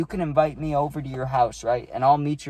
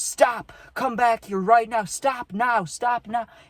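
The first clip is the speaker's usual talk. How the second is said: put-on very high, shrill, shouting police officer voice; 9 semitones higher than usual. Retelling being chased over fences by a cop: imitating a cop yelling. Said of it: "He yells out".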